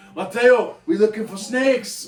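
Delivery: bad fake Paraguayan accent, pitched high. Paraguayan speaker retelling an actor's line, in Jon Voight's bad Paraguayan accent. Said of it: "John Voight has the worst accent I have ever heard".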